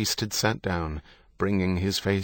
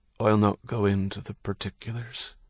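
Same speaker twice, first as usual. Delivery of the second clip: usual speaking voice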